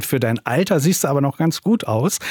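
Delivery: plain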